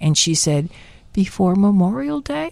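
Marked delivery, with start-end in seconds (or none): 1.1-2.5 put-on weak, feeble voice. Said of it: "she weakly says to me".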